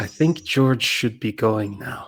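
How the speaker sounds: hushed half-whisper under the breath. Storyteller voicing a woman in the scene as she half-whispers. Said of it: "and she whispers".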